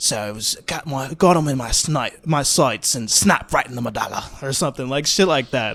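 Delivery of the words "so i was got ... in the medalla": put-on heavy, laid-on Australian accent. Quoting a grandma from a movie, in a thick Australian accent. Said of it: "I just love that accent".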